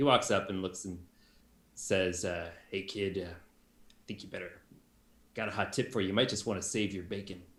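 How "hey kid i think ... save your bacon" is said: put-on weary older man voice. Voicing an older apprentice who has seen better days: River, weary older apprentice. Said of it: "kinda seen better days, older guy".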